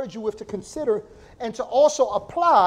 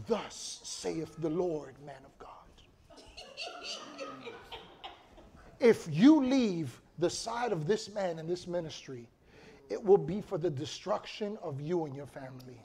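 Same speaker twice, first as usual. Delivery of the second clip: solemn, mystical, prophetic pronouncement; 7 semitones lower, 10 dB quieter than usual. Retelling a guest speaker's sudden prophecy: imitating a spiritual prophetic pronouncement. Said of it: "real spiritual".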